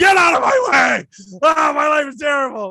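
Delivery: mock angry father voice, loud, high, shouting. Retelling how a struggling father snaps at his excited kids, imitating an angry father. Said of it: "He's like".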